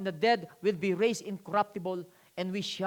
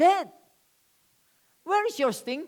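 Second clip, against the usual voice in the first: taunting, loud, swooping, mocking sarcastic jeer; 8 semitones higher, 5 dB louder than usual. Quoting scripture about death, said in a mocking, sarcastic tone. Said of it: "we can say it sarcastically".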